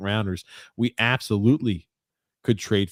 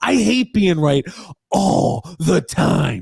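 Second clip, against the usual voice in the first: cranky, know-it-all grumbling, loud and pitched up; 9 semitones higher, 6 dB louder than usual. Doing an impression of Grump, a co-host, while calling the game: Grump impression. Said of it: "I'm trying to do my Grump impression".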